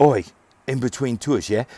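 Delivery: put-on British accent. Speaker recalling moving-company work between tours, fake british accent. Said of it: "that was almost a British thing".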